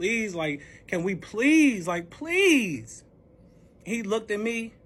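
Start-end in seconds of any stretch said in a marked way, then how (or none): 0.0-3.0 put-on desperate, imploring, repeated pleading and begging. Speaker re-enacts pleading with a man who then rejected them: retelling begging. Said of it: "So I'm begging".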